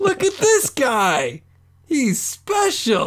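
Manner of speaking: very high, swooping shriek at the top of lungs. Showing how to call out a birthday guy to everyone, screaming at the top of lungs. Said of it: "start screaming at the top of your lungs".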